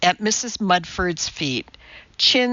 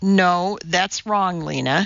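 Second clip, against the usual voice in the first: ordinary delivery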